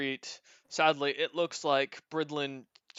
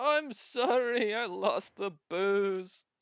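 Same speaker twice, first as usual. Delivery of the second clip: very slow, high, drawn-out, weeping, sobbing speech; 5 semitones higher than usual. Voicing a sobbing character apologizing to his captain: sobbing while talking. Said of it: "he's sobbing as he s-, looks at, uh, his captain and goes".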